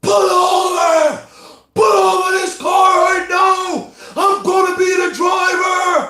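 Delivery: furious, menacing, loud, slow, intimidating shout. Telling a story, the voice demands the driver pull over: loud angry intimidating yell. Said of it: "Now it's louder with more anger and frustration".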